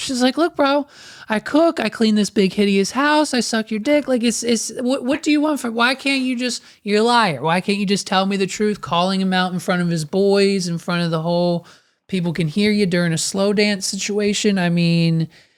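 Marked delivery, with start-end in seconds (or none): 0.4-8.8 mock, frantic outburst, completely losing it. Retelling a drunk character's outburst at a wedding: imitating Cassie freaking out. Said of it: "And she starts freaking out".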